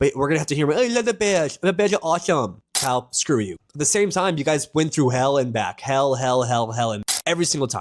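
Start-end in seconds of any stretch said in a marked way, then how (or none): 0.8-2.6 mock slight lisp, higher pitched. Mimicking how he will sound celebrating a Bears win, imitating a little lisp. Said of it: "That's how he sounds".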